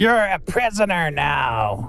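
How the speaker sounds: high kobold creature voice, "now" drawn out. Speaking as the kobold in a game, in a kobold voice. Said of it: "the kobold says".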